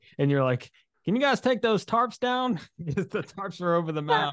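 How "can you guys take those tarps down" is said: fake, put-on country accent. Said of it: "trying to add a little country accent to it".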